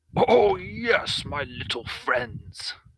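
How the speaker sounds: slow, drawn-out, high-pitched giant voice. Voicing Milok greeting the small visitors at the door: Milok voice. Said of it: "And Milok looks down and goes".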